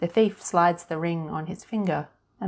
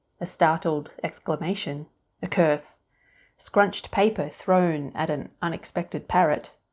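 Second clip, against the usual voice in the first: usual speaking voice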